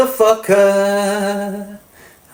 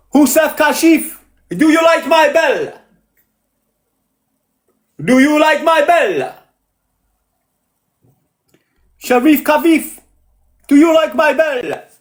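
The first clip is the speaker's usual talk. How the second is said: put-on Italian accent, higher pitch; 5 semitones higher than usual. Speaker testing whether he sounds Italian, in a fake Italian accent. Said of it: "Do I sound Italian?".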